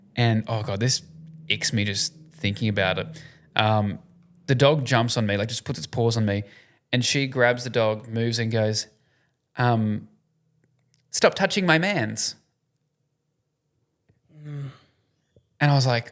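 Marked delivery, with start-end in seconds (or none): 11.1-12.4 dead serious, earnest sincerity with raised pitch. Quoting what she said after grabbing the dog, mimicking an earnest tone. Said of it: "like earnestly".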